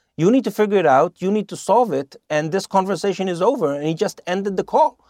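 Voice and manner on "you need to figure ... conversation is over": usual speaking voice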